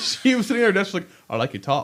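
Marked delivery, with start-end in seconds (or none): 1.3-1.8 put-on British-sounding accent slipping out. Retelling what a coworker said at her desk: imitating a British accent. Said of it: "speak in a British accent".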